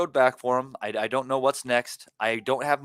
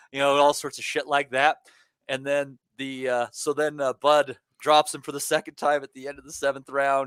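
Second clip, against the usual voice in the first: usual speaking voice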